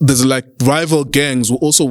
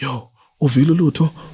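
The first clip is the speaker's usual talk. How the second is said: put-on whispering voice. Retelling how people now speak of a kid: imitating people whispering. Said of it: "people are whispering".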